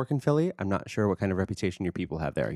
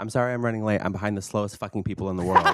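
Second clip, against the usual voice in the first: normal talking voice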